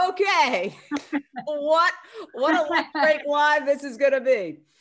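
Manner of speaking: high, loud, excited exclaiming. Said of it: "And I'm like".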